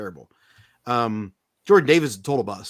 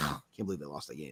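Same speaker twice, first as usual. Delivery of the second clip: annoyed, lower and quieter; 9 semitones lower, 17 dB quieter than usual. Retelling own words in bed after a team lost: imitating own annoyed self. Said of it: "Just so annoyed".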